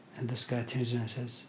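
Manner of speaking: normal talking voice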